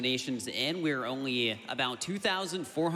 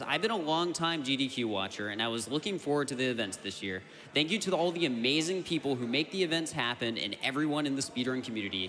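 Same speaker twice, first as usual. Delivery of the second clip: ordinary talk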